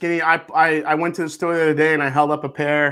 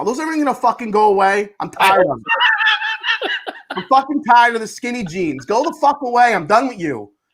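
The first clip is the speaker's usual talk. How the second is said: swooping, playfully furious, angry rant; 8 semitones higher than usual. Chatting with friends, working himself up into a rant: mock anger. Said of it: "I'm gonna get fucking angry now".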